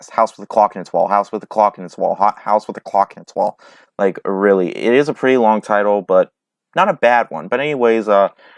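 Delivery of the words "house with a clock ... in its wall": very fast, rattled off like a tongue twister. Speaker showing the movie title as a tongue twister, said very fast. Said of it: "say that really fast".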